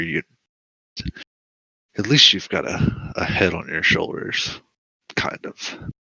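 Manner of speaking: contemptuous, sneering, superior tone. Game master voices a character eyeing one adventurer: sneering. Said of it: "and I was sent here by my mother. / she's she's kind of just inching closer".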